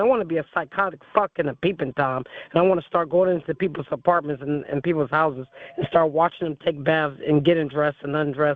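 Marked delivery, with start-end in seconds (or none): none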